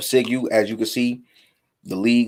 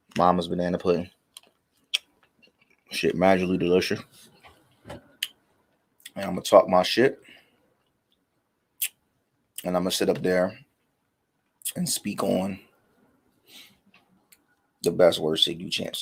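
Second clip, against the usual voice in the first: eating while talking, lower and quieter; 4 semitones lower, 6 dB quieter than usual. Apologizing to listeners for still eating, talking while eating. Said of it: "I'm still eating Thanksgiving".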